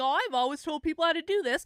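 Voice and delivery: fast rattled-off delivery. Complaining that James steals his ideas in speeches: imitating James. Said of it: "he's saying".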